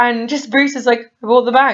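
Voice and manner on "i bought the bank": put-on casual, nonchalant, offhand delivery. Retelling a film scene where Bruce answers Clark: imitating Bruce saying it nonchalantly. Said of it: "he just says it in such a nonchalant way".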